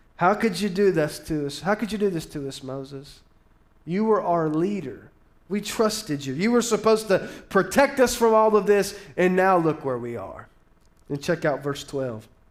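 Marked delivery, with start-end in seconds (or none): none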